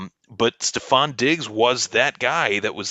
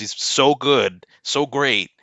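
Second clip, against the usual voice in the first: mocking, sarcastic tone. Praising Kirk Cousins while talking about a player's trade: sarcastic. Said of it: "I'm saying this sarcastically".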